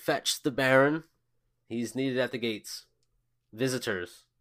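loud, shouted, calling downward. A guard at the gates turns to call to a guard below, shouting an order. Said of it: "turn over his shoulder and shout".

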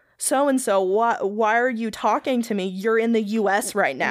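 ordinary delivery

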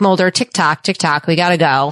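plain

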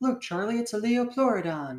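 very high-pitched, put-on cartoon unicorn voice. Quoting a line from Charlie the Unicorn in a unicorn character voice. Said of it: "That's my impression of the unicorn".

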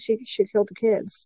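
soft, hushed, insinuating whisper. Retelling what he said to the investigator: imitating a whisper. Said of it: "he starts whispering".

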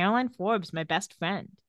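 ordinary delivery

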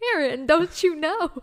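pointed, mocking tease in high, loud voice. Teasing the other speaker for telling the audience things: teasing imitation of other speaker. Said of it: "'Cause you're like".

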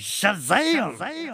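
big, loud shout.

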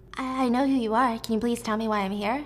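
ordinary talk, nothing marked

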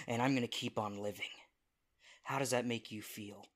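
ordinary delivery

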